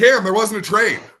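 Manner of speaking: very high, loud hollered call. Retelling friends' reply after the near miss: retelling hollering. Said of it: "they're all hollering".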